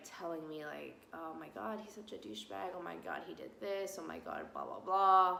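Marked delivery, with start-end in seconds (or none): none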